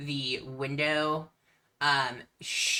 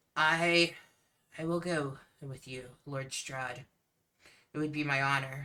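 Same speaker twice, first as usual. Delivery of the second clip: barely audible hushed half-whisper; 4 dB quieter than usual. Voicing Irina handing bones to Lord Strahd, feeling rough: half-whisper. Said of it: "so she talks in, like, a whisper".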